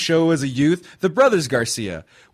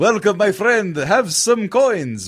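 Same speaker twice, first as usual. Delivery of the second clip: exaggerated Italian accent; 4 semitones higher than usual. Describing stock game character voices: stereotypical Italian accent. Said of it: "Italian or like Euro owner guy".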